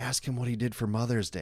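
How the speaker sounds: half-whispered, hushed voice. Retelling how the manager half-whispered to the girl cutting his hair, imitating someone half-whispering. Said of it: "like whispers to her".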